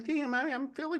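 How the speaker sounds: squeaky put-on voice. Describing a fearless kid by imitating how he talks, Mike Tyson on helium voice. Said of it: "he sounds like Mike Tyson on helium".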